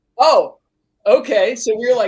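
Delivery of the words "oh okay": high, loud, startled realization. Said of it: "And I was like".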